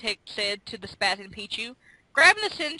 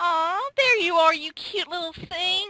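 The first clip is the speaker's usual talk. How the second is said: high, sweet cooing voice; 8 semitones higher than usual. Narrator reading a character greeting a little creature: cooing. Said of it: "Igglybuff cooed".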